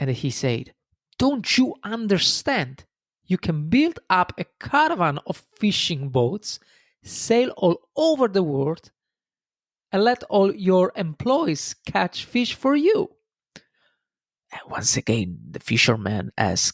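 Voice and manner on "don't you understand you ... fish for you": play-acted irritated, impatient businessman voice, pitched up. Narrating a story, the businessman grows angry with the fisherman: angry businessman. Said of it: "The businessman was getting angry".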